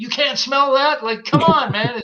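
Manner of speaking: high, loud yell. Retelling how you yelled at Dwayne sitting nearby, retelling a yell. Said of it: "I'm yelling like".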